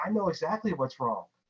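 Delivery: restrained, frustrated tone. Recalling shaking the monitor while watching, retelling screaming at the screen. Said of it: "screaming at it".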